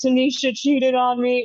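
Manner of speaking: high, heartbroken, tearful voice crying through words. Acting out the leader of a group, imitating someone crying. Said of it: "the guy running it, he's, like, crying".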